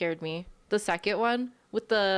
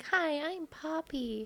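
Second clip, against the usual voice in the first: put-on high-pitched, creepy girl voice; 9 semitones higher, 5 dB quieter than usual. Asking whether the game's character is a creepy girl, imitating creepy Poppy. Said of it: "is it that creepy girl that's like".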